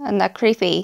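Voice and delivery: ordinary talk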